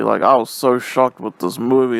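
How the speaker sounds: ordinary delivery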